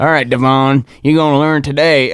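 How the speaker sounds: put-on Southern accent with a taunting tone. Retelling what kids said while pushing a classmate in: Southern accent. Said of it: "I don't know why I gave him Southern accents".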